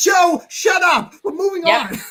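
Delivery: high, drawn-out, play-acted hollering. Retelling how Sparks yelled at the speaker: imitating Sparks yelling. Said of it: "yelling at me".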